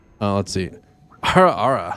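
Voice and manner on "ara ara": tone of open, audible revulsion. Trying to say ara ara the way someone asked, disgusted tone. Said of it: "Can I say ara ara in a disgusted voice? ... I'll try for you".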